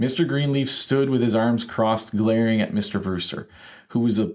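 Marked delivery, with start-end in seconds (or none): none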